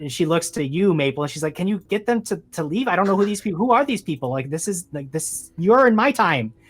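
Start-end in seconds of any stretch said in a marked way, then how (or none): 1.5-6.5 flustered, agitated, pitched up, pleading, growing more upset. Voicing a woman asking someone to make strangers leave: agitated woman's voice. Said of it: "getting more and more agitated".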